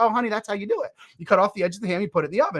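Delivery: put-on laughing voice while talking. Retelling a phone call where the mother answers: imitating someone laughing while talking. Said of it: "she laughs on the other end".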